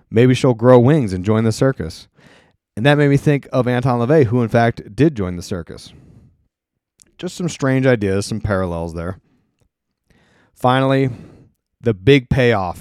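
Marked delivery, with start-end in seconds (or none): none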